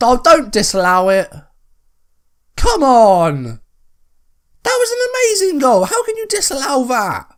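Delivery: voice cracking, very high. Protesting a disallowed goal while playing a football game: voice cracking. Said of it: "my voice is cracking".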